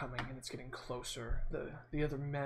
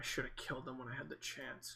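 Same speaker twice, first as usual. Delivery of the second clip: mumbled, much quieter; 6 dB quieter than usual. Tending to the wounded, a player's character mumbles under breath. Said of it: "I kind of mumble".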